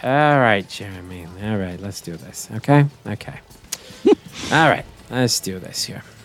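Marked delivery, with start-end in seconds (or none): 0.0-2.5 tired, weary, sighing resignation. Retelling how Ralph reacts to Jeremy, imitating Ralph's biggest sigh. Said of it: "the biggest sigh of like".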